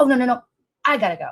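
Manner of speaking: mock huffy, curt brush-off tone. Retelling what the other speaker said before hanging up: imitating someone getting huffy. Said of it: "you got all huffy".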